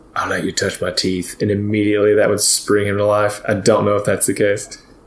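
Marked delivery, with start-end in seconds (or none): 0.2-1.4 soft, quiet under-the-breath whisper. Speaking in character to wake a companion: whispering. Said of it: "and then I whisper".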